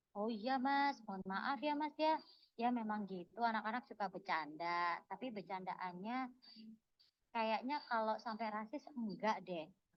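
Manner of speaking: soft, hushed, polite-sounding reply. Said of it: "Oke, aku akan mulai balas sekarang".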